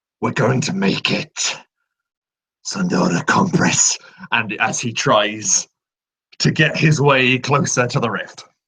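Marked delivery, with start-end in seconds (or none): 0.2-4.0 gritty, rough, creaky growl. Player narrating a character lifting another face to face; retelling a growl. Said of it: "And he just growls".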